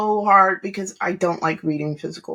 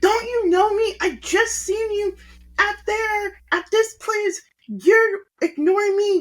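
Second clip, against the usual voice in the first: yelling, pitched way up; 13 semitones higher than usual. Retelling how she sounded at the end: imitating her yelling. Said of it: "yelling like, like, she was like".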